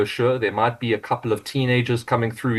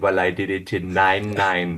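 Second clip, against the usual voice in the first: slow, put-on Jamaican accent; 3 semitones lower than usual. Quoting a film character's reply to a coach: jamaican accent. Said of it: "that iconic Jamaican accent".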